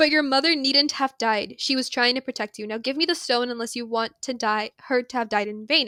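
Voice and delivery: plain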